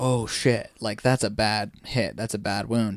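normal talking voice

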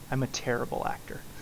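acted soft whisper. Retelling an actor leaning over a table to a co-star, retelling a whisper. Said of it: "leans over the table and whispers to Matt Damon".

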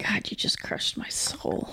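low, soft whisper of mock heartbroken despair.

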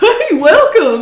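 goofy guy voice, very high and very loud. Retelling meeting a goofy guy at camp: imitating Mike's goofy voice. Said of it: "You didn't sound like that at all".

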